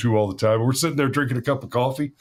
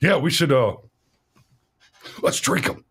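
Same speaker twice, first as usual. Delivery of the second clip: put-on conspiratorial voice. Retelling a friend's suggestion over coffee: imitating a friend, conspiratorial. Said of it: "Like he's about to make some big conspiratorial declaration".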